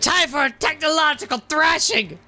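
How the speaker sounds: put-on voice, pitched very high. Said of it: "I forgot to do the voice".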